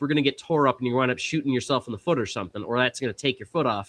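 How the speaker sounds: ordinary delivery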